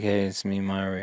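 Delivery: very quiet, very low, listless, bored mumble. Mocking the lead's delivery in the Mario movie, imitating Chris Pratt's bored Mario. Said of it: "Like you could fucking act like you care".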